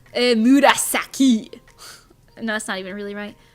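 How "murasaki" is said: loud, exaggerated, over-the-top French accent. Imagining the name Murasaki pronounced with an exaggerated French accent. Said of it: "pronounced with an exaggerated French accent".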